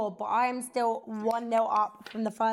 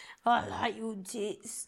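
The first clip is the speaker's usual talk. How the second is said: put-on creepy voice, much quieter; 4 dB quieter than usual. Mimicking how a man is said to speak, imitating a creep. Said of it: "He sounds like a creep".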